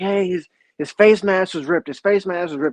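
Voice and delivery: put-on angry coach voice, loud, complaining yell. Retelling what the coaches shouted about a penalty: imitating coaches yelling. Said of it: "heard all the coaches kinda yelling".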